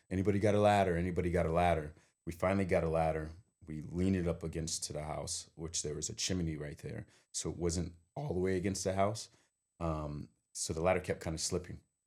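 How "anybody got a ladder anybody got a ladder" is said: plain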